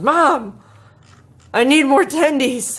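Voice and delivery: put-on loud, high, drawn-out yell. Retelling what they yelled after falling off the chair, retelling a yell. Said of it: "and I yelled".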